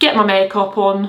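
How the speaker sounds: clumsy, failed put-on Yorkshire accent. Saying what comes next in the routine: bad yorkshire accent. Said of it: "Was that trying to be a Yorkshire accent?".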